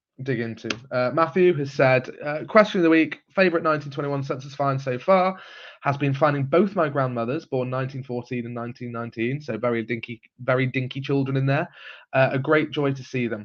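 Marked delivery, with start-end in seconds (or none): none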